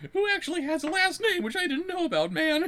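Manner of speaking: put-on cartoon slacker voice. Performing a requested voice while reading aloud: Shaggy voice. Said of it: "I think I can do a little Shaggy for you".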